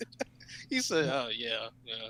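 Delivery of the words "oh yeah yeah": low, soft, mock-disappointed yeah. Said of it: "he sounds so disappointed".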